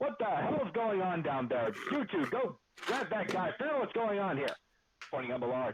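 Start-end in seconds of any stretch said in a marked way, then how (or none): 0.0-4.5 yelling, higher. Voicing an NPC giving orders to commoners: NPC shouting at commoners. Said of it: "shouting at some of the commoners".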